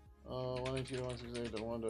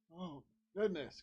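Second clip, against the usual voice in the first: yawning while talking; 5 semitones higher than usual. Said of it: "I don't know why I'm yawning so much".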